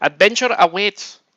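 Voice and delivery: put-on Filipino accent, high and loud. Saying a gaming accessories company's line aloud, in a Filipino accent. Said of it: "I'm gonna say it with a Filipino accent".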